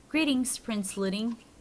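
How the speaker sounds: ordinary talk, nothing marked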